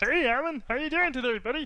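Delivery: high country bumpkin voice. Doing a put-on voice he calls his other-life voice: country bumpkin voice. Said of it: "Country bumpkin".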